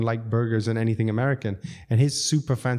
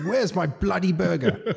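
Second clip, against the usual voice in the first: put-on pitched-up, posh, upper-class English accent; 8 semitones higher than usual. Retelling what an impatient customer said: posh British voice imitating a customer. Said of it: "But he's posh, so he's like".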